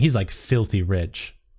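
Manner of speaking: ordinary talk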